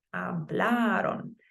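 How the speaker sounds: hablaron with heavy stress on bla. Spanish pronunciation lesson, counting one back from the O: stress on bla in hablaron. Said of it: "I'm giving this A a little more emphasis".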